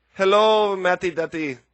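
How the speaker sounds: put-on Russian accent. Repeating a woman's phrase when asked for a sentence, imitating her Russian accent. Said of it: "her and her Russian accent saying".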